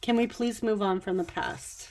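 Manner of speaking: plain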